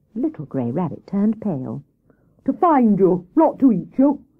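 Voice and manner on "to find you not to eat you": vexed, cross, irritated tone. Hare answers Little Grey Rabbit, who came back after being lost, crossly. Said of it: "said Hare crossly".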